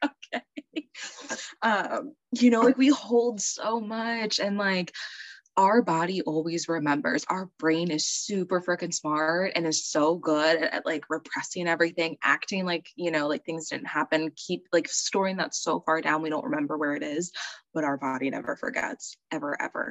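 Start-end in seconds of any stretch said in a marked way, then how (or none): 0.1-0.9 high, soft, small, accepting voice. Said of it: "I was like".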